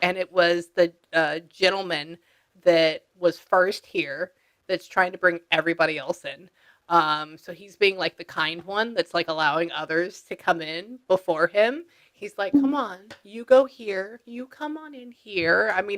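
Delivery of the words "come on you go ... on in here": light, put-on feminine voice, pitched up. Acting out a kind gentleman who lets others in first: imitating a man in a feminine voice. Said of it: "not nearly that feminine".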